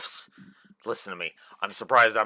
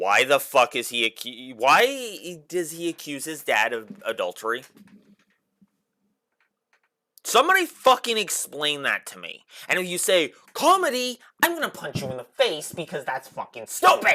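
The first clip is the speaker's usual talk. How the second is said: angry, exasperated, furious ranting, high and heated; 6 semitones higher than usual. Speaker ranting to viewers about a game's story: angry rant. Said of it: "I'm sorry for getting so angry".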